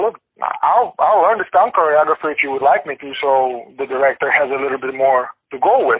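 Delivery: ordinary delivery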